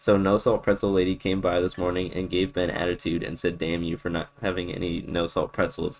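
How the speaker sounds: ordinary delivery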